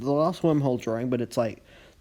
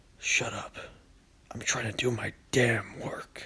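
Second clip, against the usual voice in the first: slow, breathy, whispered comic-character voice; 6 dB quieter than usual. Showing the voice of a comic book character: Wormhole's voice. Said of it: "I thought of Wormhole's voice".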